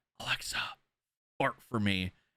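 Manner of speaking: soft, hushed whisper. Retelling a video of someone asking a smart speaker: imitating someone whispering. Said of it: "he's whispering to her and goes".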